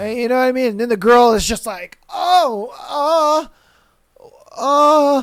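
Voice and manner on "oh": put-on high, frightened, halting stammer. Acting out a girl reacting to a clumsy kiss: imitating a frightened girl. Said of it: "She's afraid of you now".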